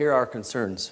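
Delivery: ordinary delivery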